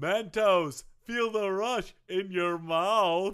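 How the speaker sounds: very slow, foppish, prissy, drawn-out drawl. Finishing a joke "brought to you by" ad line: foppish Forrest Gump voice. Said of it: "it was almost foppish".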